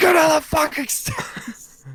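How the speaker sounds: put-on enraged screaming outburst, pitched very high. Retelling the moment a small dog ran up the stairs, reenacting a scream. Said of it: "So then I just start screaming".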